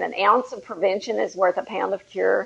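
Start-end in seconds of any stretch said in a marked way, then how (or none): none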